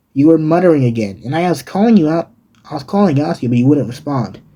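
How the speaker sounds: ordinary delivery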